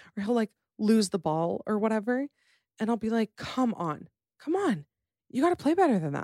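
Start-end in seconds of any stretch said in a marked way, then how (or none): 3.4-6.3 acted, really upset tone, high and swooping. Retelling how the speaker reacts when he loses the ball in a game: acting really upset. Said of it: "acting like I'm really upset".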